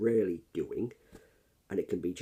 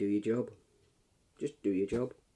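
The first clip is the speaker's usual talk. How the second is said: ordinary talk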